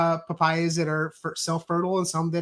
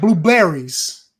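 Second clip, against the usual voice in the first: blueberries with odd, heavy stress on -ber; 7 dB louder than usual. Joking about fruit names, doing Christopher Walken stress on BER in blueberries. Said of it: "you can do the Christopher Walken uh, pronunciation".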